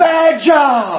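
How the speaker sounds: very high, very loud, shrill yell. Retelling how a customer reacted to bad news: imitating a customer yelling. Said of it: "he starts yelling".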